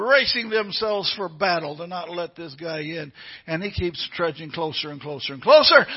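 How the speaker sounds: plain reading voice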